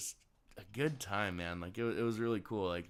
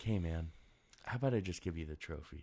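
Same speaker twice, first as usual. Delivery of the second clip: soothing voice, lower; 3 semitones lower than usual. Retelling what a game's voice says after missed shots: imitating a soothing voice. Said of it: "there's a soothing voice".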